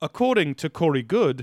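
play-acted calm, carefully measured, even phrasing. Imitating an old new zealand guy quoting a source: imitating a very measured tone. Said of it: "in a very measured tone, talking like this".

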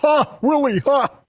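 high alien creature voice, laughing. On a radio show chatting about old TV shows, doing an ALF impersonation. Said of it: "That was my Alf impersonation".

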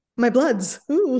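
very loud, shrill, high-pitched vampire voice. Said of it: "You sounded like a vampire then".

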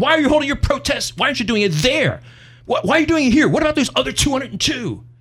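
put-on angry bellow. Retelling what an angry state rep bellowed at you, retelling an angry bellow. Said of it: "he bellowed".

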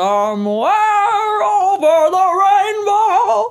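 voice sounding as if holding teeth in. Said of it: "Doesn't it feel like he's holding his teeth in?".

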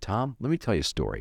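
easygoing, mild-mannered, very calm, even delivery. Retelling his reply after you sold the show elsewhere, retelling a very calm remark. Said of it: "Rob very calmly said to me".

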